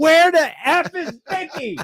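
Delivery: put-on yell pitched way, way up. Retelling a wrestler's line from a match: imitating Eddie Guerrero yelling. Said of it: "Eddie Guerrero yelling".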